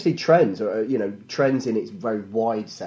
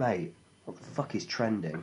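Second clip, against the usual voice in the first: play-acted worried, hushed, really concerned whisper; 11 dB quieter than usual. Retelling the brother's question on a stag do: imitating a really concerned voice. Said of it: "In a really concerned voice".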